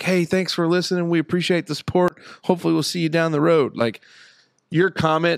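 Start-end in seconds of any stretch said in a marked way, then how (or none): 0.0-3.8 mock condescending tone, put-on condescension. Retelling a planned reply to a commenter: mock condescending tone. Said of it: "in the most condescending way".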